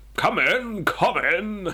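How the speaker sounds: big booming English voice, very high, very slow. Narrating a story, a voice calls out to the President, booming English voice. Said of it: "comes a booming voice. An English voice".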